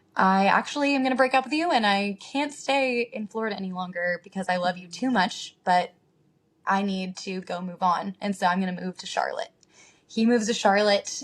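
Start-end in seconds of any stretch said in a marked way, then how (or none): none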